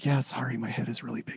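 very soft, hushed, very quiet aside. Retelling a reply to the hair and makeup person on camera: retelling own quiet reply. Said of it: "quietly to her".

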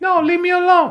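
put-on shrill, very high, loud girl voice. Showing how the two imitate a girl: imitating a girl. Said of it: "We're imitating a girl".

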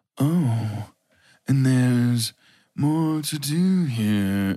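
very slow, seductive, flirty cartoon cat voice. Mocking how she talked the whole time: imitating a seductive cartoon cat voice. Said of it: "talked like a cartoon cat that was trying to seduce a dog".

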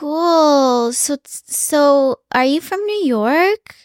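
put-on influencer-style voice. Imitating how a woman talked, everything in a Kardashian voice. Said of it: "talking with this like Kardashian voice".

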